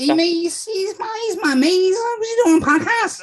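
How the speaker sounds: put-on poor Scouse accent, Irish-sounding. Podcaster imitating Liverpudlian listeners, in an accent that sounds like an Irish leprechaun. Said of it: "That's a bit like I Irish leprechaun".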